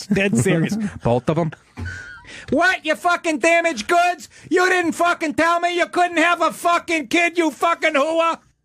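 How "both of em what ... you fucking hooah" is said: angry put-on New Jersey mobster voice, higher. Acting out a Sopranos scene, ranting at the girlfriend: Christopher Moltisanti voice. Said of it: "I sound like Christopher Moltisanti".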